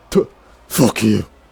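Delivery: spitting before speaking. A man threatened at gunpoint answers his questioner by spitting at someone. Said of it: "He spits on Charlissandra".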